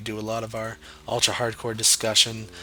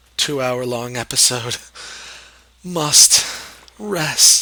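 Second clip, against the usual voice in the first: worn-out, raised voice giving out; 2 semitones higher, 6 dB louder than usual. A Minecraft video host closing a two-hour episode, voice giving out. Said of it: "voice giving out".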